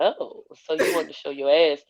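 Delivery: very deep and very calm. Retelling what he said while she lay there, imitating a deep, calm voice. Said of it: "He has a very deep voice, so very calmly he was just like".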